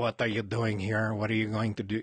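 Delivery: mock thick, heavy French accent. Retelling how Canadian border guards questioned him: imitating a thick French accent. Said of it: "they had a thick accent".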